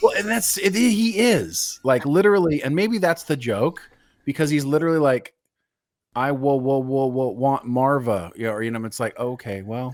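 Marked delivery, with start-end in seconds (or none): 6.1-8.3 put-on stutter with repetition, slower. Discussing a scene with another speaker, quoting the character: imitating a stutter. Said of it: "a bit much with the stuttering".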